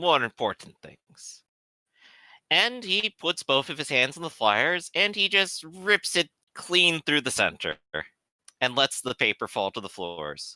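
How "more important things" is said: put-on Czechoslovakian accent character voice. Voicing a badger delivering an ultimatum: Sikovec voice, Czechoslovakian accent. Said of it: "I keep forgetting his accent".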